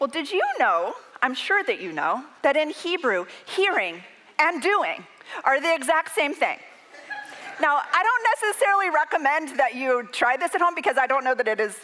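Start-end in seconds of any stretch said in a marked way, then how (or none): 0.0-6.6 patient, gentle, parental voice, soft and kind. Retelling how a man answered after collecting himself, imitating his pastorally parental voice. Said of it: "in his most pastorally parental voice".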